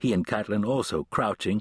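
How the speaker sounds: ordinary delivery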